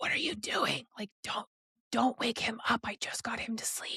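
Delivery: yelling, but in a whisper. Retelling telling her partner not to wake the baby: retelling a hushed yell. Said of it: "hush yelling at him".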